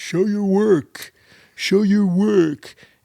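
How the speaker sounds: very high, loud, drawn-out, shrill teacher voice. Quoting a math teacher who demanded shown work: imitating teacher, sounding hard of hearing. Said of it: "it sounded like she was hard of hearing".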